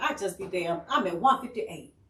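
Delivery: ordinary talk, nothing marked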